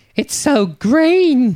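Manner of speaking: high, very slow, wistful, wondering voice. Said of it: "Gilly remarks".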